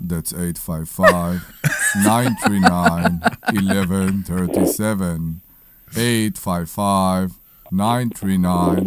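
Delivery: put-on manly voice. Reading out the phone number on request: put-on manly voice. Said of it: "give me your voice right now with the phone number".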